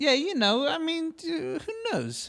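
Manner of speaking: pitched way up, swinging comic voice. Joking about maybe going to prison someday: Joe Pesci voice. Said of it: "Why you did Joe Pesci voice?".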